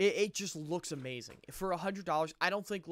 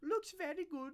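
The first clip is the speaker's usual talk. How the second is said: high-pitched, squeaky, badly done put-on voice; 12 semitones higher, 5 dB quieter than usual. Mocking who approved the instructions: terrible Tiago impression. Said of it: "It's a terrible impression".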